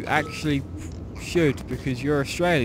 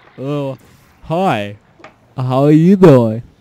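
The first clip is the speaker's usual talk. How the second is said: very loud, dim-sounding, put-on American accent; 12 dB louder than usual. Asked to settle things by doing an American accent, in a put-on American accent. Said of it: "American, how does that go again?".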